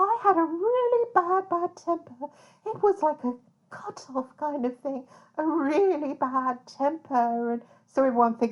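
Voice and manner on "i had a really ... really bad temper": high-pitched innocent put-on voice, even higher. Quoting a killer's words about his temper: high-pitched innocent Kenneth Bianchi voice. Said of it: "high-pitched, innocent Ken voice".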